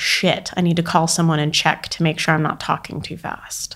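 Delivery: normal talking voice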